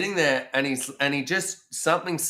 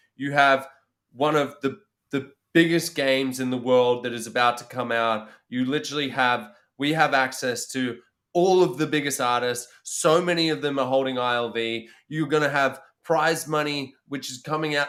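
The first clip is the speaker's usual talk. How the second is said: usual speaking voice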